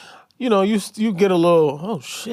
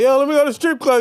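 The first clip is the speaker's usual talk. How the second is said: put-on high holler, projected as if far; 11 semitones higher, 4 dB louder than usual. Retelling asking someone about a strip club: imitating own yell. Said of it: "I yelled it down the street".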